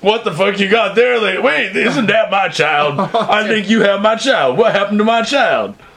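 mock drunken voice. Retelling a story, voicing the girl's father as he approached her: imitating a drunk father. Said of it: "who must have been drunk".

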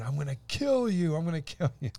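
high, unhinged screaming, over and over. Recounting a customer who kept threatening them, retelling a scream. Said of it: "she kept screaming".

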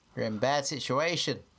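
put-on Australian accent. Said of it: "It's more Australian than New Zealand".

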